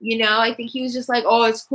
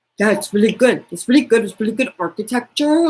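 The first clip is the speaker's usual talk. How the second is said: mocking put-on imitation of a man's voice; 4 dB louder than usual. Mocking how a couple sound during sex, imitating the man's voice. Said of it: "his voice".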